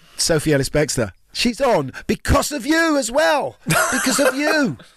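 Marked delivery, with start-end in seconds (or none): 1.3-4.7 loud shout, climbing in pitch. Host telling a co-host who is on next, shouting. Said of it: "Sorry, I'm shouting today".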